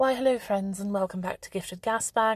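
fake, put-on English accent. Podcast host welcoming listeners back to Gifted Gasbag, in a put-on English accent. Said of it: "I need to stop doing an English accent".

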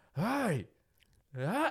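acted-out, very high, shrill screeched scream. Retelling a woman in a car's back seat yelling at the speaker, retelling a scream. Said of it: "she is screaming".

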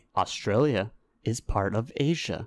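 slow, drawn-out, careful and deliberate delivery. Repeating the other speaker's claim back to him, saying it slowly. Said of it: "Say that slowly".

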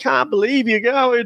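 acted, very high, weepy sobbing voice. Recapping Love Island Australia, the speaker mimics a contestant: imitating someone crying. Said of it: "he's crying".

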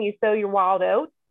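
ordinary talk, nothing marked

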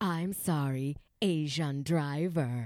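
very slow, low, dragged-out delivery. Retelling what the driver said after hitting the brakes, imitating Roy. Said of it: "And he hits the brakes and goes".

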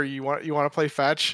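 hushed, soft, murmured half-whisper. Describing what they do to the sleeping dog, the speaker retells a half-whisper. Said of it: "go and just kind of whisper".

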